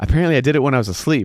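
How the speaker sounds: mock fed-up, irritated, exasperated tone. Retelling a phone call from a pissed-off friend, imitating a frustrated friend. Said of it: "why are you so mad?".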